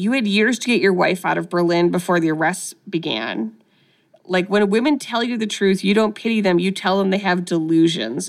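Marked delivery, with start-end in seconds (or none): none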